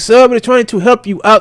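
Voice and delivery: put-on strong Indian accent. Retelling a phone call from a caller who wants information: imitating a strong Indian accent. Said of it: "strong Indian accent".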